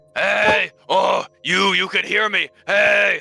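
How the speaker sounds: very high shrieking scream. In a role-played scene, a smoldering corpse screams at the listener: screaming. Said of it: "screaming at you".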